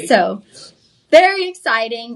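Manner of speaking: plain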